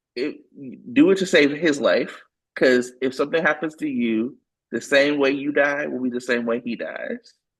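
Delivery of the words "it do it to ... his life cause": usual speaking voice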